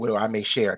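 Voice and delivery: ordinary talk, nothing marked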